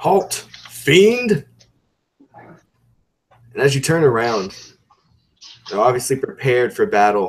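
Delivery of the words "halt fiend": commanding boom, pitched very high. A game narrator voices someone across the room halting the players, booming voice. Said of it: "you hear this booming voice".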